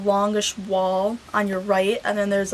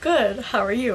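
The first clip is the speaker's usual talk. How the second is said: mock near-tearful, almost crying; 2 semitones higher than usual. Retelling answering her greeting, imitating being almost in tears. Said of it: "And I'm like almost in tears".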